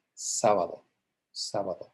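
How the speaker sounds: sábado with the first syllable sá hit hard. Showing the correct accented pronunciation: stress on sá in sábado. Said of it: "It's stressed on the third from last".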